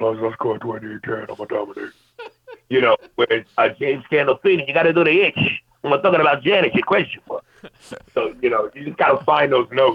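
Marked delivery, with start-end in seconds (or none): 0.0-1.9 put-on breathy bass voice, much quieter. Explaining how voice impressions work, the speaker does a breathy, bassy Shaq impression. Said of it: "when you do a Shaq is real breathy and bassy".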